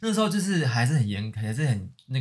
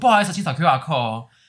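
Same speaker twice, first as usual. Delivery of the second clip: acted-out loud shouting, louder; 4 semitones higher, 7 dB louder than usual. Retelling telling customers who rushed in to scan the qr code, retelling a repeated shout. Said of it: "我就一直大喊说".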